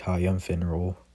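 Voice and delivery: plain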